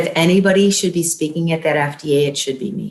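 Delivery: normal talking voice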